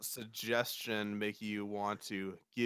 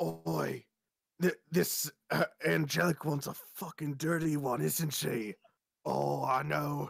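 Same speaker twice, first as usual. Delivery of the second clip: loud, high stage whisper; 6 semitones higher than usual. Voicing two characters who look at each other: loud stage whisper. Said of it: "they'll whisper pretty loudly".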